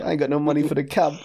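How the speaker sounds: acted-out laughing while speaking. Retelling what a man said after pulling up outside, retelling someone laughing. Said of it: "laughing like it's funny".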